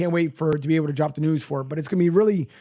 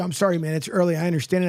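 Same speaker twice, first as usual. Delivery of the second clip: ordinary delivery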